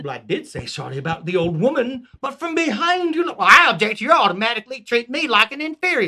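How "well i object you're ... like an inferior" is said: put-on southern US rural peasant accent. In a scene, a peasant answers the king, as Dennis in Southern peasant accent. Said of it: "have Southerners as the peasants".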